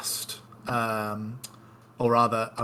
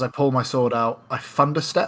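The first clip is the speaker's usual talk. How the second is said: plain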